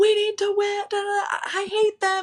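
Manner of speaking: mock ballistic yelling, very high and frantic. Retelling screaming at the team after getting out of the inning: imitating someone screaming. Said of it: "I was screaming at my team".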